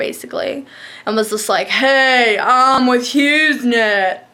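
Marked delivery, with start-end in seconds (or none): 1.7-4.1 very slow, spaced-out, drugged-out drawl. Retelling what a stumbling repairman high on drugs said: imitating a man high on drugs. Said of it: "This guy is so fucked up on drugs".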